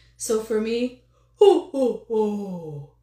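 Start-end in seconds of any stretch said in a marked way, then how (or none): 1.4-2.9 loud, long, rich, booming, drawn-out ho ho ho. Voice lesson showing how voice quality changes: Santa Claus ho ho ho. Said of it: "Suddenly it got a little uh, more fuller, got a little bit darker sounding, got a little richer sounding".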